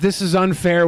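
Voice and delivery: normal talking voice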